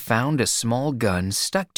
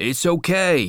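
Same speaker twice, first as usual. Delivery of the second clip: short-tempered, impatient, slightly raised pitch; 5 semitones higher than usual. Reading a novel, the narrator voices a man who has searched a young man, impatient. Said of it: "McCluskey said impatiently".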